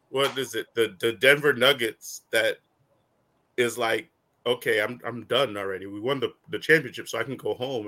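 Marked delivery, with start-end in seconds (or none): 4.5-7.9 mock flat, bored, low-energy voice, lower pitch. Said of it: "you sound like the dude on the friggin'".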